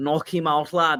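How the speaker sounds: put-on Scouse Liverpool accent. Imitating Scousers cheering a fighter: Scouse accent. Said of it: "That's actually a really good accent".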